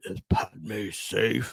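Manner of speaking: bad villain voice, very low and soft. Discussing Revenge of the Sith, the speaker tries the line: terrible Darth Vader impression. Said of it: "that's a terrible impression".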